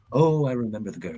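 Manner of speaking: put-on wistful old-Hollywood film star voice. Acting out the wistful feeling of nostalgia, sounding for a second like Burt Lancaster. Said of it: "I sounded like Burt Lancaster there".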